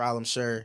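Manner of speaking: normal talking voice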